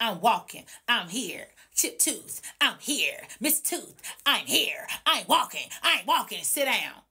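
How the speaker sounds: put-on voice with attitude. Retelling a late friend's arrival at a meeting: imitating Mona Lisa with attitude. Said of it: "Attitude, attitude, attitude".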